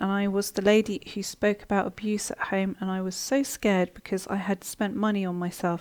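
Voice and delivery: ordinary talk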